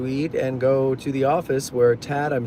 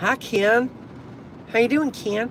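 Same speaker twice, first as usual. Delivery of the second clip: put-on very high regional accent, E sounds said as I; 9 semitones higher than usual. On the show, speaker greets ken in regional accent, e's as i's. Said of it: "I don't know what accent that is".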